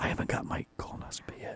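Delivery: hushed voice. Admitting something to the other speaker: whispering. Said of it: "don't whisper that".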